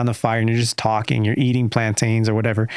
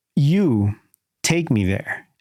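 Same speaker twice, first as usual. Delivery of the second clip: imitated broken English, higher; 3 semitones higher than usual. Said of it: "breaking out in broken English".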